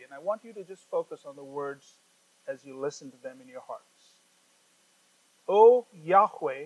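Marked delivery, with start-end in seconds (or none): 5.5-6.7 loud, slow read-aloud voice. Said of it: "Let me read this psalm again slowly".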